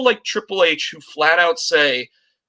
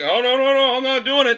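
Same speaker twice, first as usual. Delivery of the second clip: flat-out adamant, firm tone, high-pitched; 8 semitones higher than usual. Mocking how Gronk refused to take the bump: imitating Gronk refusing. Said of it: "he was like".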